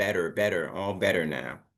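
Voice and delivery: American accent, t flapped to light d. Teaching an accent lesson on the letter T, American accent with T as light D. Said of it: "the T will become a light D".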